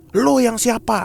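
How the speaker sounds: snapping, high-pitched spirit voice.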